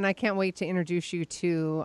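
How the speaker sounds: usual speaking voice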